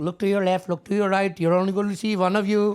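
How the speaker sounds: fake Indian accent, high. Retelling what a professor said on the first day: imitating a professor's indian accent. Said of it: "that accent was so good".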